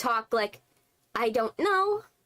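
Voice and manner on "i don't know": uncertain, hesitant, noncommittal tone, pitched up. Contrasting assertive and unsure speech for job interviews, hesitant unsure delivery. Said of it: "When you say like that, it sounds like you're very unsure of yourself".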